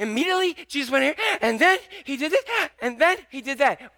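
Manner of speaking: put-on fast, high, childlike little-kid voice. Speaker acting out a gospel writer's simple style, in a little kid voice. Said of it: "he kind of talks like a little kid".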